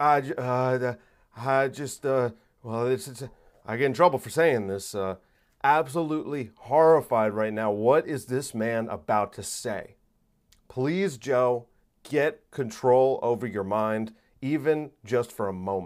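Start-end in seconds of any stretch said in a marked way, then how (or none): 0.0-5.0 put-on stammering voice. Imitating a politician's halting answer: Joe Biden impression, stammering. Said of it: "and then he's like".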